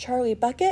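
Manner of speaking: timid small whisper. The last child comes forward to mr. wonka, in a small nervous whisper. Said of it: "a small, nervous voice whispered".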